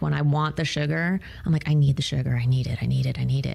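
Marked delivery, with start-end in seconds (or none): 1.7-3.6 manic, desperate, fiending, insistent voice. Retelling how a sugar craving takes over: imitating her manic sugar craving.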